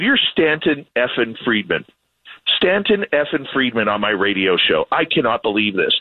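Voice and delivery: ordinary delivery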